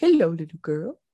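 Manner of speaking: slick, smooth, enticing delivery. Suggesting what Pennywise could say to lure the little girl: Pennywise voice. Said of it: "come on, Pennywise. ... Could be like".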